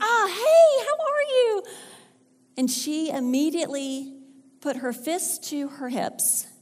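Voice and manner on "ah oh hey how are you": mock, very high-pitched, eager, excited tone. Retelling opening the door to a new friend, retelling an excited greeting. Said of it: "And so I was all excited".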